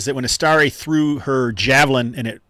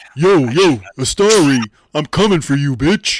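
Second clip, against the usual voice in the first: put-on tough warrior voice, louder; 5 dB louder than usual. Taunting an enemy named Astari in the middle of a battle: put-on warrior voice. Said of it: "I don't have any good warrior voices".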